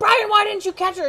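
acted, very high, loud shrieking scream. Retelling how a cat fell and a man failed to catch her: retelling a scream. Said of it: "And I'm screaming".

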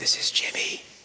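soft, unvoiced whisper.

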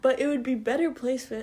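speaking through a yawn. In a casual conversation, yawning while talking. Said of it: "Excuse me, I'm yawning".

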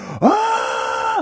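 very high, shrieking monkey scream.

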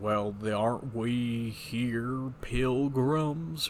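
put-on very slow, drawn-out old cowboy drawl. Act out someone across the room while the drill instructor is yelling, in a John Wayne impression. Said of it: "randomly does a John Wayne impression".

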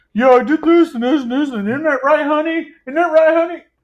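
very high, squeaky, shrill, loud caricature voice. Retelling what he kept saying over and over: imitating him. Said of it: "he was like".

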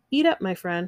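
ordinary delivery

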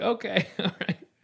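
high, laughing, awkward "okay".

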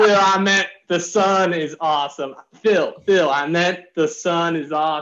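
poorly done Southern accent.

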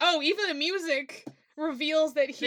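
ordinary talk

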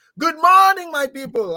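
very high, shrieked, screamed words. Retelling a movie scene of a man greeting the morning: imitating someone screaming.

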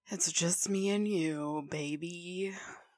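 seductive, sultry voice. Welcoming the listener at the start, in a sultry voice. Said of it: "Do you like that sultry voice?".

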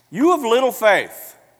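sharp, very loud, very high scolding tone. Acting out a possible reply to a sinking follower: imitating a sharp rebuke. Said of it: "maybe he gave him a sharp rebuke".

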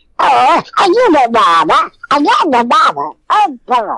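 put-on cartoon baby duck voice. A cartoon voice actor shows how his baby duck character sounds: Quacker baby duck voice. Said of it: "he's a baby duck, and he sounds like this".

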